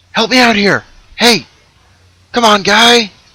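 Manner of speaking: calling out loudly. Voicing an unseen prisoner calling to a player character: calling out to get attention. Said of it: "A voice rings out from behind you".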